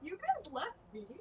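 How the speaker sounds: sarcastic, teasing, joking, mock-aggrieved tone. Planning what to tell the group, sarcastic, joking. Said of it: "in like a sarcastic, joking way".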